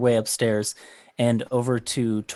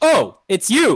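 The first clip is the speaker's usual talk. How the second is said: shrill, booming, incredibly loud, very high voice; 9 semitones higher, 8 dB louder than usual. Retelling how he greeted the visitor, in an incredibly loud voice. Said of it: "in an incredibly loud voice".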